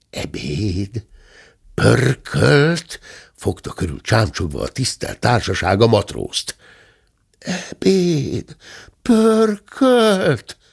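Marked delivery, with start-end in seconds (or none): 7.4-10.5 words sighed out in a very high voice. The big chest repeats the crowd's questions about lunch; sighing. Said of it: "Sóhajtotta a nagy láda".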